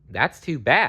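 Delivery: plain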